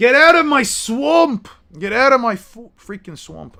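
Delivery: very loud, high-pitched bellowing yell. Joking that someone acts like Shrek now, the speaker quotes him: Shrek impression. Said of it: "like Shrek now?".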